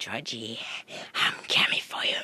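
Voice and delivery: loud horror-clown voice, called out. After a co-host's sign-off, one speaker declares he's Pennywise: Pennywise impression. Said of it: "Great Pennywise impression".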